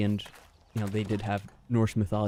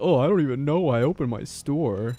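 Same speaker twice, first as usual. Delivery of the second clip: put-on whiny crying voice, higher; 4 semitones higher than usual. Retelling the trader's complaint: imitating Trader Rekt practically crying. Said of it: "he's practically crying".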